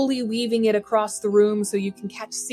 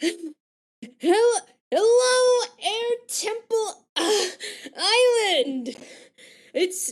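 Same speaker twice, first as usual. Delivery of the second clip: breathless, out-of-breath character voice; 12 semitones higher than usual. Playing a character who just mastered a move, out of breath character voice. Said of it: "he's a little out of breath".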